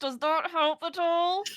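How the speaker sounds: speaking with mouth almost still. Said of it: "I'm moving my teeth like this".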